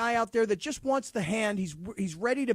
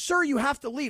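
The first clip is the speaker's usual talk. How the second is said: aggressive, demanding put-on woman's voice, pitched higher; 5 semitones higher than usual. Retelling a store employee telling a customer to leave: imitating an aggressive woman. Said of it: "she got aggressive right away".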